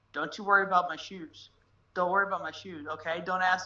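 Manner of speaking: put-on dead-serious, low voice. Retelling a man's reaction when asked about his shoes, imitating him getting real serious. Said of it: "he looks up at me real serious".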